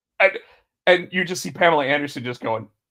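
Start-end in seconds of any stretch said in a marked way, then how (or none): none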